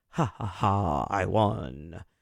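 very slow, deep, low, cool dragged-out drawl. Explaining blocking texts, gloating at a blocked texter in a cool Dracula voice. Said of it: "in like a cool Dracula voice".

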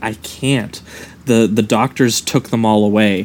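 ordinary talk

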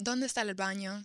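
Dominican-accented Spanish. Saying a Spanish phrase after another speaker asks: Dominican Spanish accent. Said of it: "But I have a Dominican dialect accent".

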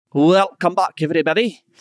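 put-on Scottish-accented voice. Podcast host welcoming listeners back after an ad: Scottish accent. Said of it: "I do love your Scottish accent".

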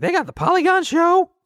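put-on very high, wide, squeaky kid voice.

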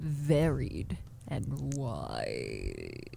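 very low, soft, swooping put-on deep voice. Asked by the other speaker to repeat the phrase deeper, in a deeper voice. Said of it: "Can you say varied and wide a little bit deeper?".

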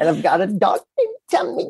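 put-on high, sing-song baby talk. Imitating a man who talked like to a child: baby talk. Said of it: "talking kinda like he would talk to the kid".

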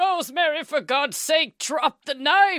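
frantic, very high-pitched yell held long and drawn out. Acting out a hallucinated hospital outburst from a news story: imitating William Castle yelling. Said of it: "even yelled out".

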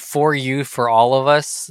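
normal talking voice

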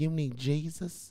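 soft, gentle, tender-hearted preacher voice. Retelling what an Uber driver said: imitating a super sensitive preacher voice. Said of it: "he kinda had the voice, like the super sensitive preachers".

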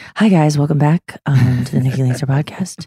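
jazz radio announcer voice. A podcast host opens the show, sounding like a jazz radio DJ voice. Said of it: "I don't feel as tired as my voice sounds".

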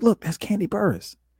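urgent stage whisper. Retelling how his wife pointed out someone at the airport: imitating someone half-whispering. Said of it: "she whispers, she's like".

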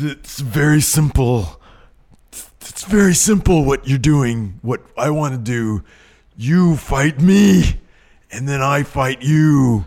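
slow, high, drawn-out wrestling promo voice. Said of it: "he's in there talking about".

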